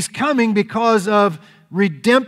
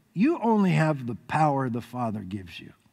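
put-on slight chuckle while talking, lower, quieter; 8 semitones lower, 9 dB quieter than usual. Retelling Jesus answering Pilate, imitating Jesus chuckling. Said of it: "I see Jesus kind of chuckle a little bit and go".

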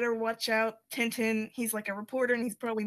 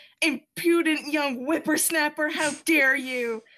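loud, raised yelling; 5 semitones higher, 6 dB louder than usual. Retelling a comic scene where a tycoon yells at Tintin: imitating someone yelling. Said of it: "yelling at Tintin".

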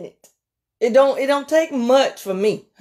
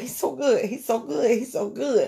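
voice near tears, close to crying; 7 dB quieter than usual. Preaching that grace is sufficient, saying he's so good: on the verge of tears. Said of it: "I wanna cry right now".

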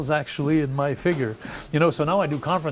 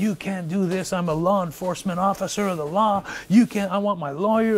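put-on screaming; 4 semitones higher than usual. Recounting being thrown into a jail cell, retelling a scream. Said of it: "and I'm screaming".

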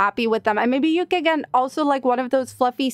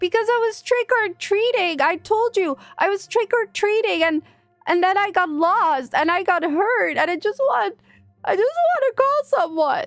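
fake crying, much higher pitch; 8 semitones higher than usual. Pretending to be a lost, hurt trick-or-treater begging to call someone, fake crying. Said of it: "Now I'm crying".

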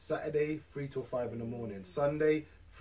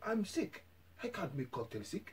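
put-on Eastern European accent, spoken much quieter; 4 semitones higher, 7 dB quieter than usual. Retelling a phone call with Kovac, imitating Kovac's Polish-Russian accent. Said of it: "because he was like Polishy, kind of Russian".

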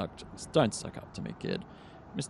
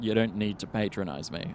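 usual speaking voice

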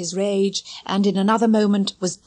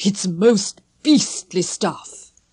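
shuddering, slower. A father about to take his medicine, speaking with a shudder.

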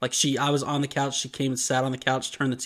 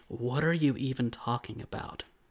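mock under-breath mutter, much quieter; 5 dB quieter than usual. Recapping a scene, quoting a character's reply, retelling an under-breath mutter. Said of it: "he says under his breath".

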